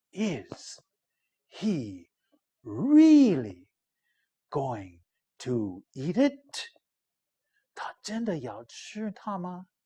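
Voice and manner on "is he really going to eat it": whispering excitedly. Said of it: "They're whispering".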